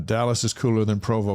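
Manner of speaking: ordinary talk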